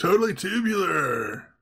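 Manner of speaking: high surfer-dude voice with slangy delivery. Describing two kids trying to seem cool on Halloween, surfer dude impression. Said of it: "By acting like surfer dudes".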